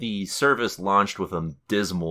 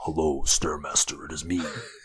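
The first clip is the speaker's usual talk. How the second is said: threatening put-on devil voice; 2 semitones lower than usual. Acting out a voicemail from Satan: menacing Satan voice. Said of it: "he goes in there and he's like".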